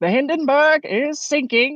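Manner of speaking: put-on very high, old-time 1930s newsreel announcer voice. Speaker demonstrating an old-style announcer for a video narration, 1930s announcer voice. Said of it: "nineteen thirties announcer voice".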